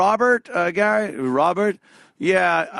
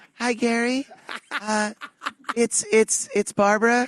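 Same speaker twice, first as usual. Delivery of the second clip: high, put-on woman's voice; 5 semitones higher than usual. Retelling how Billy West would call Gary: put-on woman's voice. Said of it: "and with a woman's voice".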